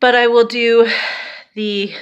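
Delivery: short of breath, winded, gulping air. Updating listeners on plans during quarantine in italy, out of breath. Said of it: "I'm out of breath".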